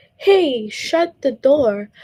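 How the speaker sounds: firm tone, voice lifted. Explaining exclamations, the speaker demonstrates a command with a raised voice. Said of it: "I could be raising my voice".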